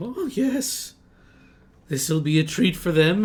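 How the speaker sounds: amused chuckling. Voicing a wizard building a mechanical spider: chuckling to himself. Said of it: "he chuckles to himself and he'll say".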